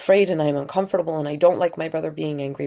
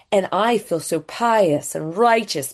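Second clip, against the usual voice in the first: normal talking voice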